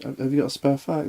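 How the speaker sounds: shy, soft, timid little voice. Retelling how a little chap in the smoking area asked for a cigarette, imitating a timid voice. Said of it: "Timid voice".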